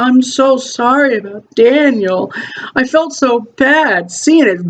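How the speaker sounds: very high, slow, fake-sorry sarcastic tone. Retelling Charlotte's promo about Daniel: imitating Charlotte's sarcastic tone. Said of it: "being clearly sarcastic".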